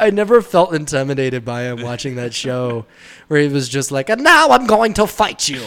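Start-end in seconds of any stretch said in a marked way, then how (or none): 4.1-5.6 put-on high old woman voice. Imitating Frieza, who sounds like an old woman: Frieza voice. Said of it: "He sounds like an old woman".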